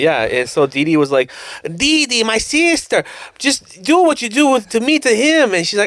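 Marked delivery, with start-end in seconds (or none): 1.6-5.5 slow, high-pitched cartoon voice. Retelling a cartoon scene, quoting the boy genius: Dexter voice. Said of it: "you doing the voice made me happy".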